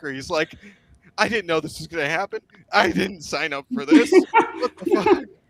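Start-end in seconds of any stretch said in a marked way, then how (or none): 1.2-5.2 acted, loud, swooping crying wail, blubbering through words. Retelling a radio call, speaker acts out the new guy in the bunker, imitating someone crying. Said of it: "this new guy's like crying in the bunker".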